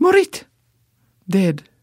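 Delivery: put-on glib, flippant tone. Recounting asking where Stella is, imitating Dr. Ludmilla's flippant reply. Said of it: "almost like a flippant "Morit."".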